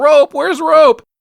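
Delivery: nonstop screaming, very high and loud. Retelling a movie scene, imitating Frank screaming. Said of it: "has not stopped screaming through this whole scene".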